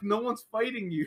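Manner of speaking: very high, fast, incredulous outburst. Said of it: "I'm like".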